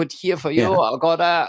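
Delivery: fake Norwegian accent, done badly. Retelling what the acupuncture staff told him: bad Norwegian accent. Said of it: "I'm doing a Norwegian accent, just a bad one".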